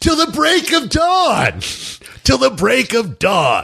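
sudden high-pitched shout. Describing a funny scene, imitating Nicolas Cage yelling. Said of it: "Nicolas Cage starts yelling".

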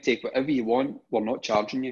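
ordinary delivery

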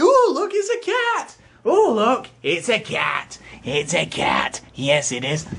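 put-on high, swooping, thrilled excited kid voices. Retelling how kids bang on the window at the cat: imitating excited kids. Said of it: "they start banging on the window like".

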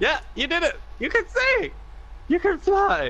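mock ecstatic, high-pitched, excited, thrilled squeal.

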